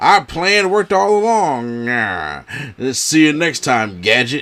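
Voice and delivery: swooping cartoon villain voice. Imitating a wrestling manager's gloating line: cartoon villain voice. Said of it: "a cartoon villain type thing".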